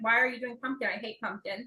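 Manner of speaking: ordinary delivery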